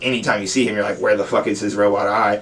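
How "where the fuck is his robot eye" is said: normal talking voice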